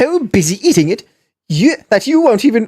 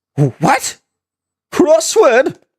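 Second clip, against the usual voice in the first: scared, baffled, frightened, bewildered, pitched up; 5 semitones higher than usual. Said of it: "sounds like he's genuinely in fear of crosswords".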